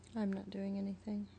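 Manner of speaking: soft, downbeat, glum voice. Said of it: "Could you sound more upbeat when you say it".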